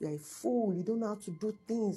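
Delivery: put-on yelling. Retelling what a partner yelled during a hospital visit: retelling someone yelling. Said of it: "was yelling at me".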